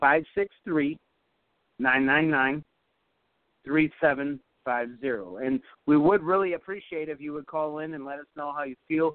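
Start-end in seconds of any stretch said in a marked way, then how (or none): 0.0-5.5 very slow, drawn-out delivery. Reading out the call-in number for listeners: really slowly. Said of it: "give it to you two more times really slowly".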